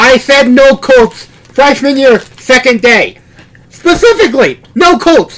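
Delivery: scolding, voice lifted. In a role-play, a character turns on their dorm roommate: yelling. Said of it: "I'm just yelling at you".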